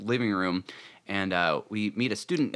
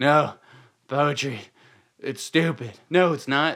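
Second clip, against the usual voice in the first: put-on drunken mumbling, pitched up; 5 semitones higher, 6 dB louder than usual. Retelling how a drunk professor talks to himself: imitating drunken mumbling. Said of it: "starts mumbling to himself, drunken".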